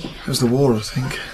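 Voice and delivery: hushed whisper, under the breath. Explaining to others why the fireworks shook Jack up: whispering. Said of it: "What are you whispering for?".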